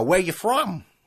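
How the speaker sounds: put-on thick, broad Chicago accent. Quoting an old security guard's question to them, thick chicago accent. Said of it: "that was a Chicago accent".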